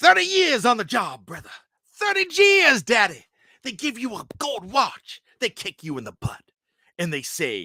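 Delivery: very high, swooping put-on wrestler voice, wide pitch. Trying wrestler impressions after a Hulk Hogan attempt: Dusty Rhodes voice. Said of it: "I'll do my Dusty Rhodes".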